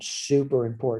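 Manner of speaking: ordinary delivery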